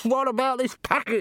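very high, shrill shouting. In a story, a character calls out a question to another man, shouted. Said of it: "shouted Downey".

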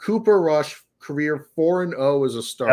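plain

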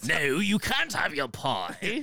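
silly character voice, high, swooping, sing-song and drawn out. Parodying a BBC drama scene about pies and rain: Monty Python character voice. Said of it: "they all sound like Monty Python characters".

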